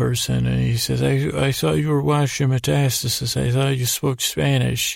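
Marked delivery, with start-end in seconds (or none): none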